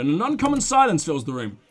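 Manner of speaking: ordinary talk, nothing marked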